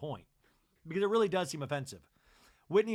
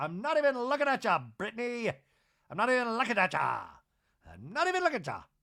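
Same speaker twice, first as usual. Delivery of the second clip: put-on sing-song Irish accent, repeated; 4 semitones higher, 4 dB louder than usual. Retelling what Bronwyn said to Brittany, imitating Bronwyn with an Irish accent. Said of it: "Like she's Irish".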